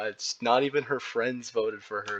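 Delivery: ordinary talk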